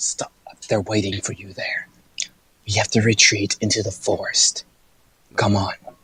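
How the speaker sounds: soft, breathy, urgent whisper. In the game, Yalka grabs his companion's armor to warn him: whispering. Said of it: "and whispers".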